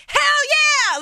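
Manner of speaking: put-on high, loud, boisterous, excited drunken yell.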